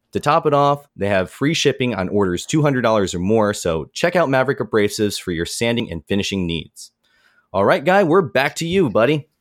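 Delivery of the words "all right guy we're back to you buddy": bright, cheery, high radio-host voice. Handing the show back to Guy after an ad read: cheery radio-style handoff. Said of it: "that was cheery".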